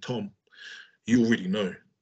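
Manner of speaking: deep put-on imitated voice. Retelling hearing the father's voice say it: imitating father's deep voice. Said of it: "my father's got a really deep voice".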